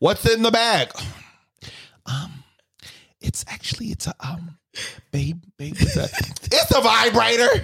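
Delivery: very soft, hushed, barely voiced whisper. Acting out a past exchange to show they were whispering, retold whispering. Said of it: "see me whispering".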